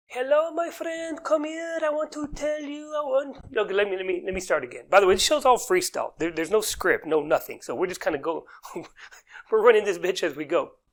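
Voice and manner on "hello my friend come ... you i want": put-on Persian accent, pitched very high. Showing how a persian man selling lotion at a mall kiosk would sound, persian accent impression. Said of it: "The Persian man will typically sound like this".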